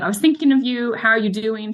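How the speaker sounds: normal talking voice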